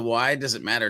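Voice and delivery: ordinary talk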